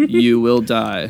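put-on dull, lifeless, cold, flat delivery. Mocking the new film's line reading, imitating Shang Tsung's cold, dull delivery. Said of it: "delivering it in this very cold manner".

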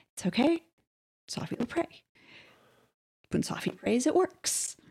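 very soft, hushed voice. Voicing a character reassuring the party about Safi praying: very quiet voice. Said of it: "very quietly".

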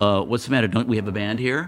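ordinary delivery

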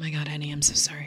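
low, soothing, sympathetic spa-style voice. Retelling how people react to hearing about an illness: imitating a soothing spa voice. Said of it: "People already spa voice me".

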